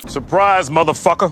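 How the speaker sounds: put-on terrible American accent. Ending a pitch to upgrade to Premium with a joke: terrible American accent. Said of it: "Forgive the terrible American accent".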